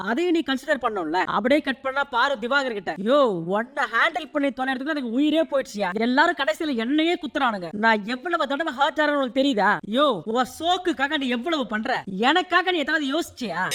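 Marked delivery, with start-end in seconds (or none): none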